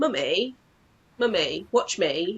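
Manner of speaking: put-on drawn-out little child voice. Comparing anxiety to a toddler demanding attention: imitating a toddler. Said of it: "A toddler that's going".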